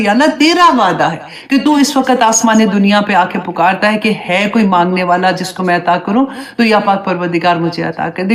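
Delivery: ordinary delivery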